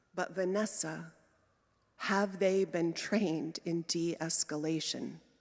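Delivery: soft, quiet, worried and concerned. Retelling a question Larry asked: quiet concerned tone imitating Larry. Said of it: "he said quietly in a concerned tone of voice".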